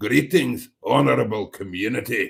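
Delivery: deep, dark, sinister, threatening, ominous voice. Voicing someone's greeting to the community, deep, dark, mock-threatening voice. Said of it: "says he in that um, deep and dark, rather threatening".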